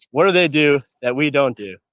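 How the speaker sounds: normal talking voice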